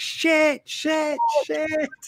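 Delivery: high squawking budgie shout. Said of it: "my budgie kept shouting".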